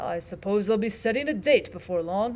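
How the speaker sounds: usual speaking voice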